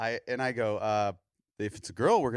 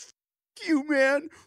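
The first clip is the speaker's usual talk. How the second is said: play-acted very high, tearful, angry sobbing outburst; 4 dB louder than usual. Retelling how a man reacted after being told in the office, imitating him crying angrily. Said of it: "Tears streaming".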